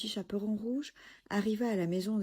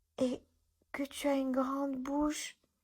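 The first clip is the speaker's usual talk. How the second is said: put-on feeble, weak, pitched-up little girl's voice; 7 semitones higher than usual. Reading a tale aloud, voicing the little girl near the bed: murmuring in a weak voice. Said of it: "murmura la petite fille d'une voix faible".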